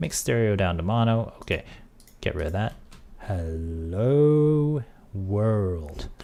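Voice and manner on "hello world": extremely slow, whispered delivery. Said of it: "let's try that even slower".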